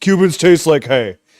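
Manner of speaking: very loud, sarcastic put-on angry-guy voice. Retelling a line from his own cigar review, in a sarcastic put-on angry guy voice. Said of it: "sarcastically said in a in a a guy an angry guy voice".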